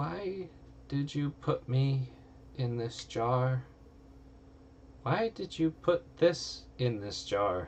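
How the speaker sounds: distressed, upset creature voice, high and slow. Voicing a creature trapped in a jar: upset trapped creature voice. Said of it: "it's quite upset".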